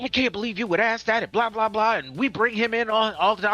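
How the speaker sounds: put-on furious, unhinged angry rant. Retelling a customer losing her mind at a question: imitating an angry rant. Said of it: "she loses her mind".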